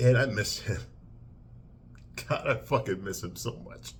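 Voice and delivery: tearful voice. Reviewing a movie, the speaker talks about its effect on them: crying. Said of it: "even though I'm crying right now".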